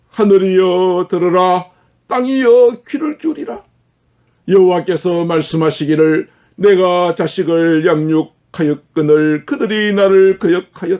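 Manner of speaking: grieving, sorrowful, lamenting delivery. A preacher reads Isaiah aloud to the congregation, reading with sorrowful emotion. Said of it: "제가 좀 감정을 넣어서 읽겠습니다".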